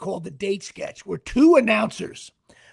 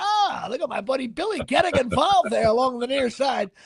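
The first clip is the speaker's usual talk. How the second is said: pitched-up sports play-by-play announcer voice; 5 semitones higher than usual. Speaker describes teasing a buddy flirting in a bar, in a sports announcer voice. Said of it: "I do the announcer voices".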